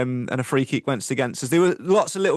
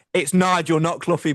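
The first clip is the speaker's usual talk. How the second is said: stern, strict, firm fatherly tone; 3 semitones higher than usual. Retelling what he told a little kid at a club open day, mimicking a stern dad tone. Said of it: "he said it in a very stern dad tone".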